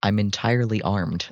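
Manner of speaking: speaking in a whisper. Leaning in close to a character in the game: whispering. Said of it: "and I whisper to him".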